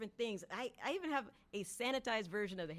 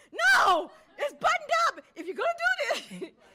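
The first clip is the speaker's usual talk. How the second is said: put-on scream, higher and louder; 14 dB louder than usual. Retelling own protest on set about a waistcoat: imitating own screaming. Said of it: "literally screaming".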